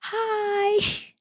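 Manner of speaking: very high, small, stretched customer-service voice. Recalling leaving a message in a little customer service voice. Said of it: "my little customer service voice".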